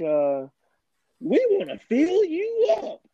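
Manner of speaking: slow, drawn-out, swooping salesman voice in sing-song. Recapping a scene where Charlie talks to a woman in his old salesman voice. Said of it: "in his old salesman voice".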